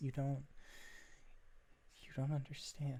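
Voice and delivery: on the verge of tears. Voicing a character with eyes full of tears: tearful. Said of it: "eyes that are ... filled to the brim with tears".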